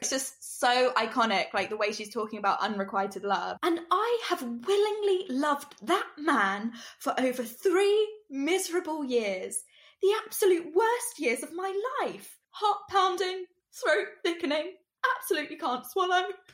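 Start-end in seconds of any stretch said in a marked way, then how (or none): 3.6-16.2 put-on thick English accent, pitched up. Performing her iconic lines about unrequited love, do a Kate Winslet impersonation, thick English accent. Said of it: "we really put on the accent thick".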